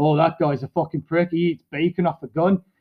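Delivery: ordinary talk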